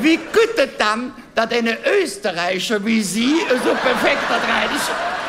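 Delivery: put-on friendly, high older-man voice, spoken while laughing.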